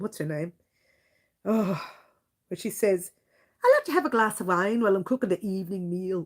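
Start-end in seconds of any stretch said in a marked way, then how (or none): 3.6-6.3 rough attempt at Irish accent. Quoting a line a woman always says, in a put-on irish accent. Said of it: "I'm using the accent, trying to use the, I think it was an Irish accent".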